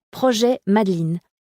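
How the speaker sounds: ordinary delivery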